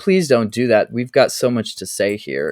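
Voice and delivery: ordinary talk, nothing marked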